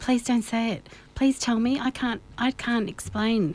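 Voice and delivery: normal talking voice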